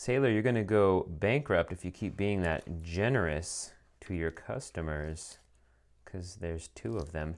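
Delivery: sarcastic mock praise. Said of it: "Uh, enough sarcasm".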